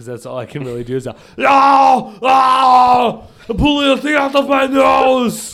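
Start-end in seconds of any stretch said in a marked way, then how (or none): 1.4-5.5 high, drawn-out, stretched-out screaming yell. Explaining the movie scene chosen for his impression, screaming Arnold impression. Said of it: "where Arnold would be able to scream".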